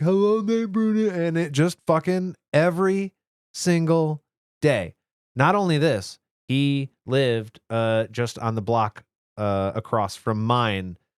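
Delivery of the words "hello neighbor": very high, dopey, taunting, mocking voice. Recalling a school bully's daily greeting, imitating the bully's dumb voice. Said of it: "he would just do this dumb voice like".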